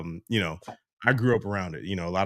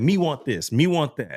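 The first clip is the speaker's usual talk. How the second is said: put-on high, loud toddler voice, almost Jamaican accent; 7 semitones higher, 5 dB louder than usual. Imitating four-year-old son Mozzie's early way of talking: imitating Mozzie's near-Jamaican accent. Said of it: "almost like a Jamaican accent".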